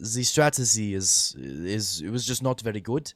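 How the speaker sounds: clumsy, bad French accent drifting into German. Trying out an accent while chatting, in a bad french accent. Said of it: "I can't do a French accent very well".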